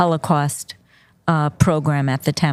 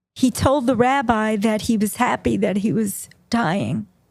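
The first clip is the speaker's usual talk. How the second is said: deeply moved, very emotional, pitched-up voice; 6 semitones higher than usual. Recounting what a dying man told the rabbi, very emotional. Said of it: "it's very emotional, this part".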